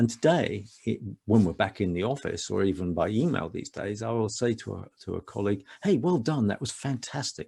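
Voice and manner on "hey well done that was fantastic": nurturing, kindly, gently superior, warm tone. Showing how they praise a colleague, imitating a nurturing tone. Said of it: "you can hear that kind of nurturing tone".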